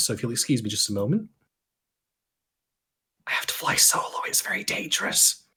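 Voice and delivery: hushed, whispered under the breath. Stepping away to recount the polls for everyone, whispering. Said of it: "I also don't know why I'm whispering".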